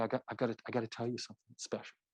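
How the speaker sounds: voice brought down low. A speaker teaching how to draw listeners in, demonstrating a lowered voice. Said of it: "By just coming forward and lowering your voice".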